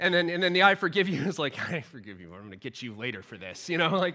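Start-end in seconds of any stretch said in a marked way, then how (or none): 1.7-3.7 through gritted teeth, much lower, quieter. Demonstrating a grudging forgiveness, said through gritted teeth. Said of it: "there's just gritted teeth".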